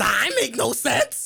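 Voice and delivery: rough, drawn-out, slow, very high creaky voice. Retelling what a man said, imitating a man's voice. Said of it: "That was a good ass impression".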